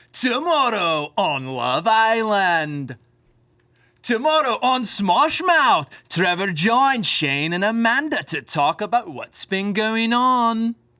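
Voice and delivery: put-on very slow narrator voice with a Scottish accent. Doing a Love Island narrator impression about a podcast: Scottish Love Island narrator voice. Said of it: "Is he Scottish?".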